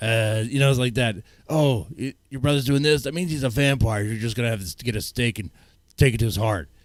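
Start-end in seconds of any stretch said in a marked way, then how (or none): 1.5-6.7 over-the-top, put-on tough kid voice. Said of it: "It's like a nine-year-old making that voice".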